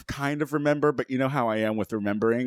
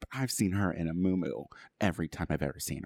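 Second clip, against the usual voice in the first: low, soft, hushed half-whisper under the breath; 6 semitones lower, 7 dB quieter than usual. Without a door to close, talking about the neighbor across the hall, half-whispering. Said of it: "I have to whisper now".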